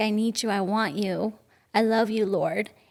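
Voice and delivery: mock passive-aggressive pleading tone. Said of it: "I realized how passive aggressive I was".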